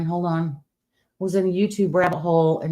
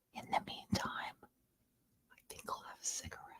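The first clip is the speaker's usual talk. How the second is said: quiet, unvoiced whisper. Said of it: "I'm whispering because I don't want to wake anybody up".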